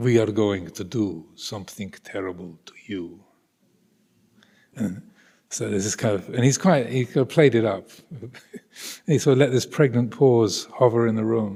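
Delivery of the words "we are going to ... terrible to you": fake, exaggerated, badly done Russian accent, low pitched. Retelling what he said around the table to American politicians in Washington, in a bad Russian accent. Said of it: "forgive my bad Russian accent".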